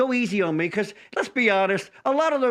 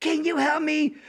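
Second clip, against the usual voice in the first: acted, beseeching, pleading, pitched-up voice; 8 semitones higher than usual. Retelling how another told the story, imitating a pleading voice. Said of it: "he's like".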